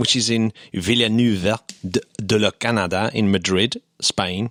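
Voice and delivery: French-accented pronunciation. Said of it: "I said that in a French accent".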